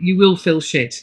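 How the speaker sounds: usual speaking voice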